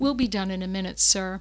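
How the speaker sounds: calm, even, courteous, gracious, kind voice. Retelling how Al answered an angry doctor, imitating Al's gracious, steady voice. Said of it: "in his very gracious, kind voice, very steady, very nice".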